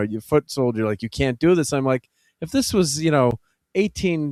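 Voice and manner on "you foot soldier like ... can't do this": normal talking voice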